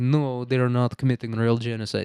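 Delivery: speaking in a put-on Russian accent. Imitating Riyadh in a comedy bit: put-on Russian accent. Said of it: "And this is Russian".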